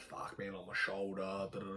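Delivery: very soft, strained mutter.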